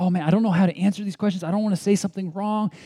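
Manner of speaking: mock upset, high, distressed, overwhelmed fretting. A pastor acts out a woman who came to him for help, imitating a distressed woman. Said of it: "she was really distressed because she was saying".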